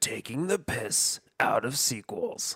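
mock horror movie poster tagline voice. Suggesting a tagline, the speaker says it like a Scary Movie 2 tagline. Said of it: "say it like a Scary Movie 2 tagline would be said".

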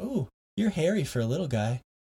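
put-on whispered voice. Retelling what a lady on stage whispered in his ear, retelling a whisper. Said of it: "she whispered in my ears".

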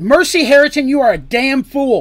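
very loud, high-pitched, full-throated yell. Artemis, stepping right into mercy's face, yells at her. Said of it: "Artemis yelled".

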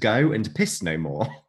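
ordinary talk, nothing marked

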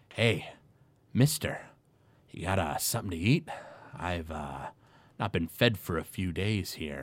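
hesitant, pleading wood elf voice. Voicing a caged wood elf who rattles the bars and begs for food: voicing a wood elf prisoner. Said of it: "he goes".

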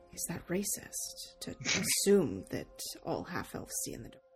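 worried, concerned, hushed whisper under the breath. A player's character turns to a companion, concerned; hushed tone. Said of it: "says in sort of a hushed tone".

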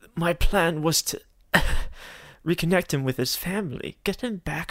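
voice with a slight tremble. Narrator voicing a character answering a question, with a slight quake in her voice. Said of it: "responds with a bit of a quake in her voice".

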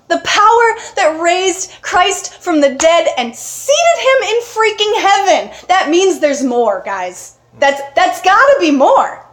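impassioned, worked-up, fired-up preacher fervor. Addressing a group, the speaker gets worked up. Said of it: "I'm sorry, I'm worked up".

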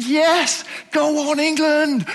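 put-on joyful shout. Recalling when England scored, re-enacting his shouting at the TV. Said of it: "I was shouting".

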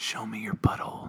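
very quiet, breathy whispering. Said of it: "I'm gonna whisper into the mic what he whispered".

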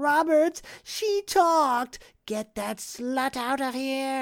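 put-on acted, very high, drawn-out whiny blubbering like a baby. Retelling an old man calling for his driver Roberts, imitating him crying like a baby. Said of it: "he's crying like a baby".

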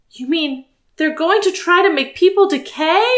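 high, trembling voice with a tremor. Hearing the invaders described, a listener asks a question; trembling voice. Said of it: "asked with a tremor in her voice".

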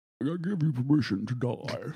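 put-on muffled villain voice with British accent. Quoting a line from the last Batman film, in a mumbling Hardy villain voice. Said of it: "With that weird ass voice".

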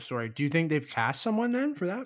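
talking through a mouthful. Speaker asks the other host a question while eating: talking with mouth full. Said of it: "my mouth is full".

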